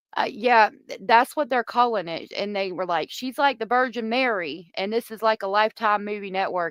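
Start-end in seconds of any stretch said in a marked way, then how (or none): none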